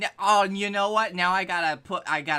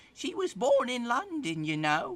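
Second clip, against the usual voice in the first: put-on tiny, high, small little old lady voice; 5 semitones higher, 4 dB quieter than usual. Speaker imitating their great-grandmother's way of talking, tiny old woman voice. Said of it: "she had a very tiny old woman voice and she talked like this".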